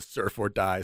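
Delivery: normal talking voice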